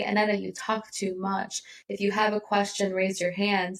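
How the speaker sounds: usual speaking voice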